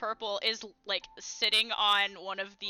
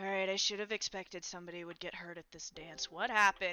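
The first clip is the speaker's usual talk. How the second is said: sleepy, drowsy, barely awake delivery; 3 semitones lower, 9 dB quieter than usual. Voicing a character behind the medical ward desk, looking up: half-awake voice. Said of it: "she looks up at you kinda half awake".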